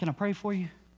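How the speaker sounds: soft, quiet, hushed half-whisper. Retelling how they approach shoppers in a store: imitating own half-whisper. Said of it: "I'm gonna whisper over to them".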